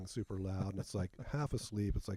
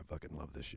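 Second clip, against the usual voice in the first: dropped, low, deep-set voice; 5 semitones lower, 6 dB quieter than usual. Retelling a man who leans forward with a hand on the speaker's shoulder, low voice. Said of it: "kind of in that low voice is like".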